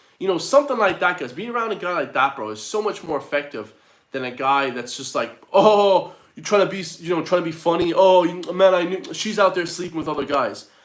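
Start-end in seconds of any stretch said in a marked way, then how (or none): 5.5-10.7 heavy, put-on, mocking sarcastic tone. Imitating a guy mocking a friend after a breakup: imitating a sarcastic guy. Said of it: "it ain't a sarcastic time".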